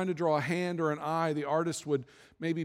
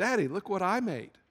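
put-on small, sweet little girl's voice; 2 semitones higher than usual. A father retells his daughter bringing him something she made: sweet little girl's voice. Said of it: "in that sweet little voice that only little daughters have".

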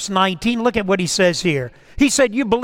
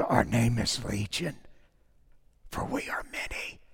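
whispered, rough, gravelly demon voice; 10 semitones lower, 13 dB quieter than usual. Retelling the Bible story, the demon answers Jesus: gravelly Legion demon voice. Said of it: "that old gravelly voice of the demon said".

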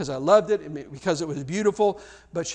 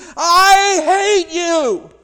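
put-on very high, very loud little-girl scream, long I; 12 semitones higher, 10 dB louder than usual. Speaker retelling a woman before a doctor and pastor, imitating a little girl screaming. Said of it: "her voice changed to the voice of a little girl as she screamed".

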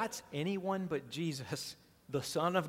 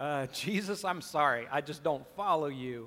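normal talking voice

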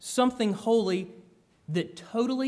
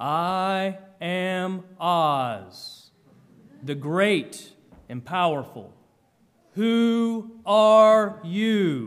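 booming wizard voice, much slower; 3 semitones lower, 4 dB louder than usual. Describing a movie preview that terrified your kids; booming Oz voice. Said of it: "a booming voice".

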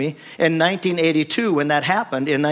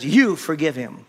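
stern, unbending, very firm delivery. Speaker retells hearing a voice speak to him, retelling a firm command. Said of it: "and he said it very firmly".

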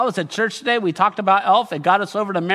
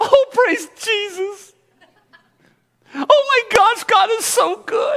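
put-on very high young girl voice. Speaker imagines the girl's reply to the angel's news, in a young girl voice. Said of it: "Is that a good 12-year-old, 13-year-old girl voice?".

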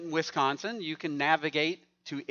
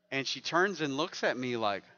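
ordinary delivery

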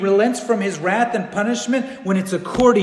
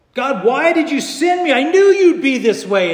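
mock furious, loud, high angry yelling; 7 semitones higher, 5 dB louder than usual. Teaching from the book of Jonah, speaker voices Jonah addressing God, acting out his screaming. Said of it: "he's just screaming and yelling".

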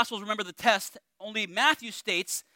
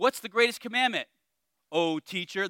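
imitated sarcastic tone. Retelling how the Pharisees questioned Jesus: imitating a sarcastic question. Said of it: "a lot of sa-, sarcasm in their voice".

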